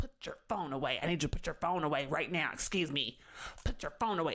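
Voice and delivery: bossy, pushy, insistent man's voice. Retelling how a man running the show ordered a phone away: imitating the man running the show. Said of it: "sees my phone and goes".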